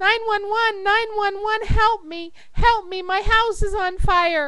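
high-pitched, loud screaming.

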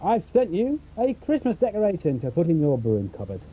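usual speaking voice

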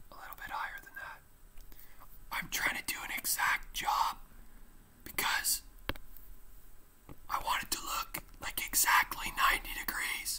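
soft, hushed whisper, barely under the breath. Speaker working a graphing example so viewers can do it alone, whispering. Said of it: "I was whispering".

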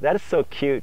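normal talking voice

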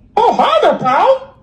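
squeaky, very high cartoon mouse voice. Asked to be funny for a TikTok, talking in a Mickey voice. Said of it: "started talking like a Mickey".

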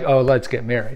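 normal talking voice

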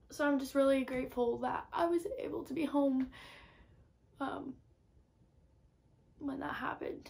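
tearful voice. Talking about a loss while away at school, crying. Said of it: "wow, I'm crying".

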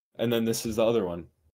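ordinary talk

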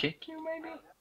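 squeaky joking voice.

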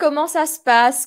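ordinary delivery

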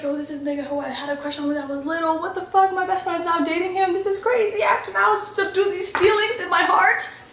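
high-pitched, stunned inner freakout.

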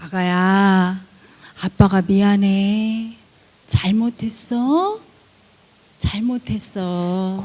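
gentle fatherly voice, low-pitched and slow.

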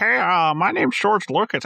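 high, froggy puppet voice. Showing how everybody imitates the director: George Lucas voice like Kermit the Frog. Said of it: "make him sound like Kermit the Frog".

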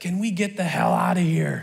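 put-on small, raspy three-year-old voice. Parent retells what their three-year-old said from the back, little raspy toddler voice. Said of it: "with his little raspy voice says".

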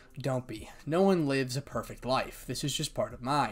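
ordinary delivery

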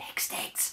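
spoken in a hiss. Narrator reading a character's line to his companion in a story, hissing. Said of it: "he hissed".

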